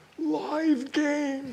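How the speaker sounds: put-on strangled voice. Retelling a shout from the back of the room at a winemaker's dinner: retelling a strangled voice. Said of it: "Strangled voice from the back of the room".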